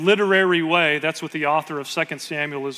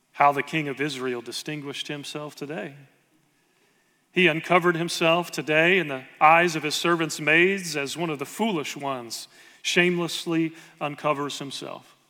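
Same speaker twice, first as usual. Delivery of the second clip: normal talking voice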